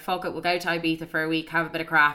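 plain

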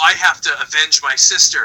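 ordinary delivery

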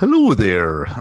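mock proper English puppet voice. Recalling an angry puppet alien from a film they watched, proper English voice. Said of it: "that was like a real proper voice".

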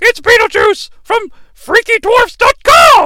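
mock yell, high-pitched, slow and loud. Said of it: "but it's like".

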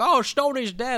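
high-pitched, slow, mocking, mock-casual delivery.

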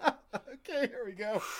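talking through giggles. Getting back on track after a joke, giggling while talking. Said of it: "I'm giggling".

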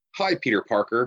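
patronizing, condescending, fake-innocent, falsely sweet delivery. Retelling a movie scene of a superhero greeting Peter Parker: imitating a condescending greeting. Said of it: "but it's very condescending".

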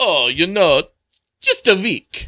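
fake put-on Italian accent. Playing a visitor answering an immigration officer, in an italian accent. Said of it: "because I did an Italian".

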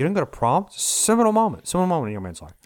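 high-pitched, quirky character voice, exaggerated. Speaker retells what George Lucas said, in a George Lucas impression. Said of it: "I'm not milking the voice".

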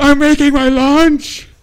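very high shriek at the top of the lungs. Retelling a favorite memory of a guy, imitating him screaming at the top of his lungs. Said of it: "he screams at the top of his lungs".

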